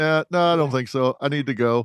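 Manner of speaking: usual speaking voice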